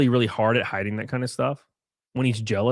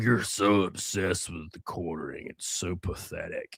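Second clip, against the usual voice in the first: irate, worked-up angry voice; 6 semitones lower, 9 dB quieter than usual. Retelling what a troll in the chat keeps saying: imitating an angry viewer. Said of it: "he just is so angry".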